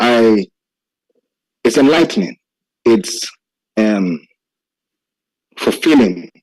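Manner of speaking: slow, choked-up voice catching with emotion. Answering another speaker, agreeing with what they said, choking up with emotion. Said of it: "I'm even choking up".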